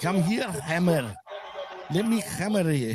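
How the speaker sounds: put-on seductive, come-hither Scottish accent. Describing a woman who never used her accent that way; sexy scottish accent. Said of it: "her sexy Scottish accent".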